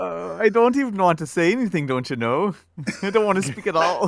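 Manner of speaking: loud, high put-on Minnesota accent, slightly off. Called on to take the next turn in the group: attempted Minnesota accent. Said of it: "I was going for Minnesota".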